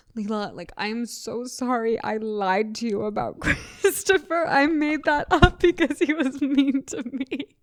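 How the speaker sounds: crying and bawling through heavy sobs. Retelling a kid crying to Leela on the phone, imitating a sobbing apology. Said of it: "Zanzan is sobbing, like bawling".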